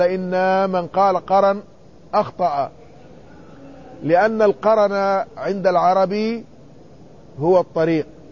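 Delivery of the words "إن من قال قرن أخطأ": plain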